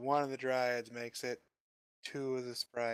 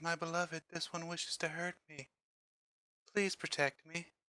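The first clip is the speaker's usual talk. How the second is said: sugary, doting, very sweet high voice; 5 semitones higher than usual. Retelling what she says to her beloved, imitating her really sweet voice. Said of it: "in this really sweet voice".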